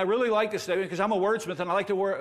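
speaking very fast, rattled off rapidly. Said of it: "I'm speaking very fast here".

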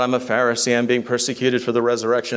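ordinary delivery

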